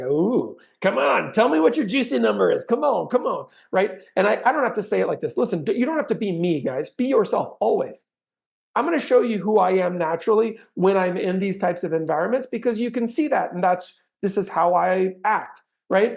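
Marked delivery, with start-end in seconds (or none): 0.0-3.5 cheery, bright, teasing and playful coaxing. Showing how to ask homeowners their selling number; said with a big smile. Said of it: "I can say that with a big smile".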